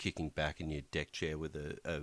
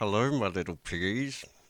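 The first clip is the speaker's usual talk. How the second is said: mock, forced voice through gritted teeth; 4 semitones higher, 7 dB louder than usual. Joking about being up at night with the baby, mock through gritted teeth. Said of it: "Just through gritted teeth".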